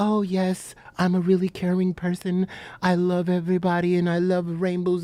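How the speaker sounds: put-on calming voice, low, slow and soothing. Speaker mocks the persona they give off on camera, in a mock soothing voice. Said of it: "with this soothing voice".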